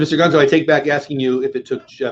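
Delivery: ordinary delivery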